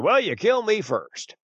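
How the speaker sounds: mock loud remark. Speaker retelling a reply to the guy standing next to them, loud voice. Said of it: "in a loud voice so everybody could hear me".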